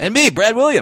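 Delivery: very high, super high-pitched dwarfy voice. A podcast co-host introducing himself at the start of an episode, super high voice. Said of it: "You went super high with your voice right there".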